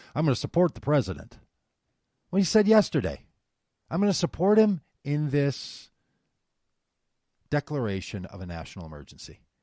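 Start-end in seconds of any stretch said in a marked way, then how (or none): 0.1-1.3 put-on Kentucky accent. Speaker quoting Mitch McConnell's statement, in a Mitch McConnell Kentucky accent. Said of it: "I'm trying to do my Kentucky accent".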